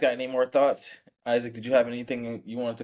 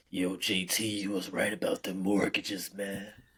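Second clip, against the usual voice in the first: deep, raspy voice, dropped low and soft; 4 semitones lower, 6 dB quieter than usual. Imagining what a guy would say about a good call, in Myron's deep, raspy voice. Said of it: "has a deep, raspy voice".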